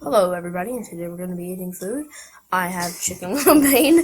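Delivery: put-on stiff delivery. Recreating how their first video opened, imitating a stiff delivery. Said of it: "not like very stiff".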